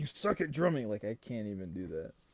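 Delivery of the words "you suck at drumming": jeering, taunting bully voice. Speaker quoting a man from a scene they watched, impression of the guy in the scene. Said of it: "it's so hard to, like, do his voice".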